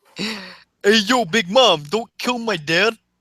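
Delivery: bad Brooklyn accent. Joking that Sanji's voice actor should sound like he's from Brooklyn, doing Sanji in a Brooklyn accent. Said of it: "should still sound like he's from fucking Brooklyn".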